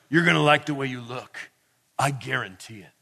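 put-on gravelly voice. Retelling a suit seller's line from every tv commercial: imitating a gravelly voice. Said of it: "And a gravelly voice".

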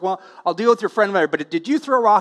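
ordinary delivery

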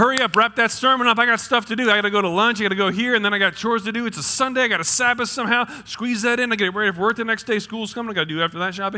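fast, rattled-off hurry-up patter. Preacher in a sermon voicing churchgoers, acting out hurried rushing. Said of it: "We rush".

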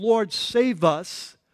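mock terrified, desperate, frightened shouting. Retelling a bible story of panicking men in a sinking boat: imitating disciples yelling. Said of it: "some of them are yelling".

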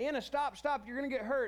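high-pitched screaming. Recalling yelling after her as she heads down a narrow path: retelling screaming at her. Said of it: "I'm screaming at her".

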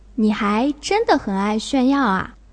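ordinary talk, nothing marked

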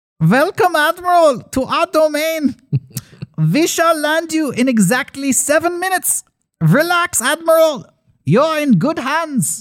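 put-on very high voice, faint Nordic or German accent. Retelling a message welcoming the Admiral, in slight Nordic or German accent. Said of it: "a slight Nordic or German accent. The message is, and I'll do the accent".

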